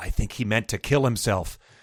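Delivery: hushed, secretive, conspiratorial whisper. Reading a scene where she leans forward to face the narrator: conspiratorial whisper. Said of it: "in a conspiratorial whisper says".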